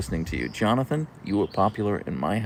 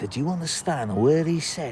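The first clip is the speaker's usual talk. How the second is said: put-on British accent, raised pitch; 6 semitones higher than usual. Act out the Snatch scene where he pulls the other guy aside, in a Jason Statham voice. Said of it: "I have to find the Jason Statham voice".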